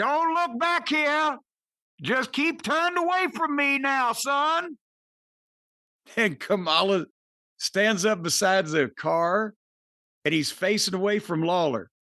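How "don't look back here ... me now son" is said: acted Southern voice, pitched very high. Retelling a roadside scene by a car, voicing the sheriff: Buford T. Justice voice. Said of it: "He hears that Southern sheriff's voice".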